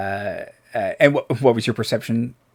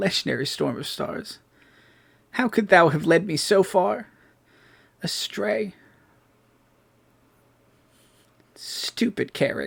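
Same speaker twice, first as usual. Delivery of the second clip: high, sorrowful, mournful, lamenting voice; 8 semitones higher than usual. The game narrator voices a voice heard calling out, in a lamenting voice. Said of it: "it's kind of lamenting".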